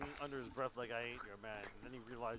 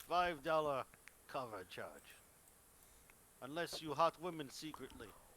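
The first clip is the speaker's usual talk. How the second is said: bad, fake Slavic accent; 3 semitones higher, 4 dB louder than usual. A man standing there calls out to you, bad Slavic accent. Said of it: "my bad Slavic accent".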